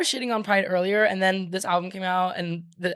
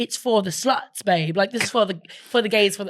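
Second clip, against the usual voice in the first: bad, put-on trashy British accent. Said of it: "I keep doing a British accent every".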